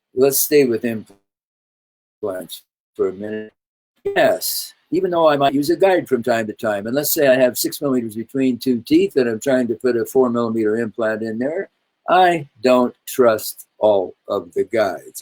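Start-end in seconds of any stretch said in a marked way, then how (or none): 12.1-15.3 slow, deliberate, unhurried, weighed delivery. Speaker explaining dental implant guides, saying this line slowly. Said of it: "I said that slowly".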